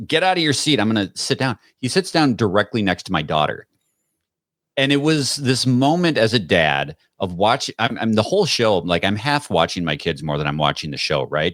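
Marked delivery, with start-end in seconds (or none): 0.0-1.6 bossy, barked delivery. A dad retells a show character yelling at an audience member, imitating the Grinch yelling. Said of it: "he starts yelling at, in character".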